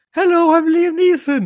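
very high, loud, belted voice. Retelling a favourite film role: high-pitched Liam Neeson good cop voice. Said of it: "him doing, like, a high-pitched voice".

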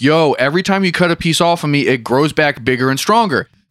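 ordinary talk, nothing marked

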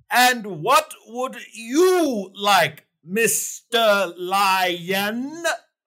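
weird, high, very slow drawl, "lion" stretched out. Asking the Lion what he would like: odd way of talking. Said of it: "why are you talking like that?".

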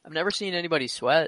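ordinary talk, nothing marked

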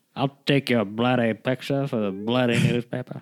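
irate, fuming old-timey put-on voice. Speaker quotes an annoyed film character about a photo, old-timey voice. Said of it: "he's got that real old timey kind of".

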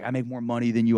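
imitated yelling voice. Retelling a video of a son yelling at an Uber driver: imitating someone yelling. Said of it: "yelling at the Uber driver".

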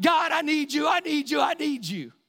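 screaming, pleading, loud and high-pitched. Telling of a man fallen in the dirt under a tent; retelling a man screaming out. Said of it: "He is screaming out".

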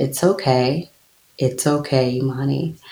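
imitated calm Southern accent. Quoting her mother's reply when she called her sobbing, imitating mother's calm Southern accent. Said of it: "very calmly and in her deep Southern accent said".

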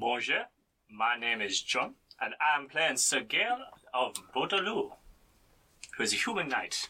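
put-on, fake French accent. Introducing a knight character to the table: put-on French accent. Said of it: "I can't stop the accent now".

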